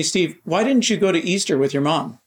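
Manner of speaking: put-on, fast, extremely accusatory, pointed tone. Retelling how a man questioned him in front of the council, mimicking an accusatory tone. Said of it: "In an extremely accusatory tone".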